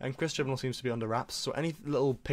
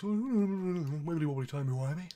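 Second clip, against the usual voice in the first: put-on deep voice, pitched higher; 5 semitones higher than usual. Showing an impression of David Tennant as the Doctor: David Tennant voice. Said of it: "he just talks at sort of a deep voice".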